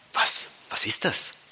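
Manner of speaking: softly spoken, quiet, hushed voice. Reading a story, a character hears booming tones from inside; asking quietly. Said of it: "fragte Patrick leise".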